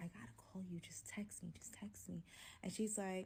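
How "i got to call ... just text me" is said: barely voiced, hushed whisper into the phone. Retelling a phone call to a best friend: retelling a whisper. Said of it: "on the phone with my best friend whispering".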